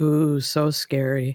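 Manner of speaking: mumbled to oneself, as an aside. A player announces muttering under their breath, then mutters in response: muttering under breath. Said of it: "I'm gonna mutter under my breath".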